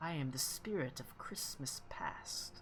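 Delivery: clear, lovely, slow, drawn-out whisper. Game master voicing a spirit the players hear: clear and beautiful voice. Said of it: "It's clear and beautiful".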